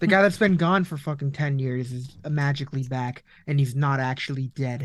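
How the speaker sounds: ordinary talk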